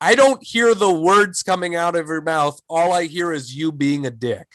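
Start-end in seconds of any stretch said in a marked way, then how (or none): none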